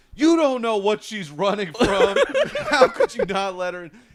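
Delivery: high, loud indignant yelling, pitch swinging all over. Telling a packed-bus story, the speaker quotes a woman at the driver, imitating a woman yelling. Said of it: "she's just like yelling at this bus driver".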